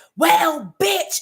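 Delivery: very high, top-of-the-lungs screaming yell. Retelling what a neighbor being evicted screamed: imitating someone screaming. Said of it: "she screamed at the".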